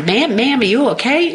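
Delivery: put-on deep country Southern accent. Retelling how a man in a trucker cap checked on her, in a deep Southern accent. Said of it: "in this like deep Southern accent".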